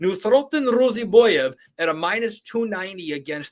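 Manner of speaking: mock Russian accent.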